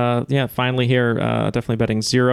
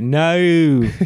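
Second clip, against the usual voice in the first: put-on high, loud Australian-accented no. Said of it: "and they go".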